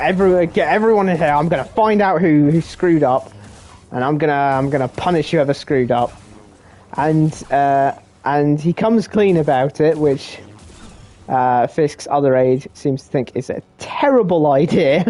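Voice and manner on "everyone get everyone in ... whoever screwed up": ordinary talk, nothing marked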